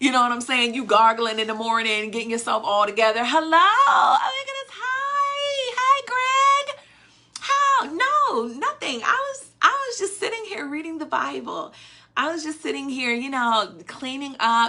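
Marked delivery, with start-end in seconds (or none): 3.2-14.7 very high, sweet, best-behaviour put-on phone voice. Acting out answering a call from Greg: put-on best phone voice. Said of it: "put on your best voice".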